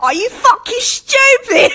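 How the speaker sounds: put-on British accent, sounding angry. Imitating British people getting mad: put-on angry British accent. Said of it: "British people get mad and be like".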